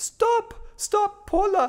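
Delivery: put-on high, loud European accent, called out. Retelling a woman suddenly interrupting while watching the speaker, in Mrs. Vinograd's European accent. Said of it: "she had this incredibly beautiful European accent".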